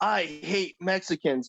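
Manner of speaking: play-acted, blunt, brash, matter-of-fact blurted outburst. Retelling what her grandma would say in public, retelling grandma saying it loudly. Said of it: "she would say this very loudly in public".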